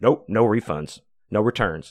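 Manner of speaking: ice-cold, frosty, curt tone. Retelling the cashier refusing a return: imitating an ice-cold refusal. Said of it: "turns ice cold".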